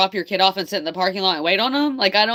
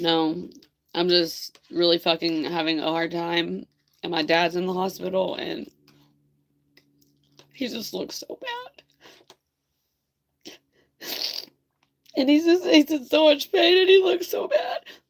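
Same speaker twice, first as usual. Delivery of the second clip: tearful, crying voice; 3 dB quieter than usual. Admitting to having a really hard time: crying. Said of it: "Me crying like a little baby".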